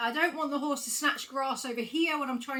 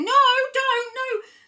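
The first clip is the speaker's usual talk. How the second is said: shrill, very loud, high-pitched angry shouting; 11 semitones higher, 10 dB louder than usual. Imitating a rider getting cross with a horse: imitating a rider shouting crossly. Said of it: "getting really cross with the horse and we're shouting".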